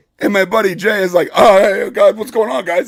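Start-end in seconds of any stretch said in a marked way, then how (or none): 1.3-2.9 mock anxious, nervous, overly nice, eager-to-please tone. Retelling a tense standoff, imitating a friend sounding nervous. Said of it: "trying to act like he's obviously nervous".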